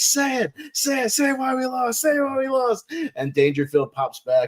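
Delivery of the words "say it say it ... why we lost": very high, slow, drawn-out, building yell. Retelling a movie scene, demanding an answer: Sam Kinison yelling impression. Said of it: "builds up and is like".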